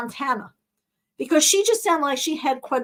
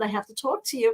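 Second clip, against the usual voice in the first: plain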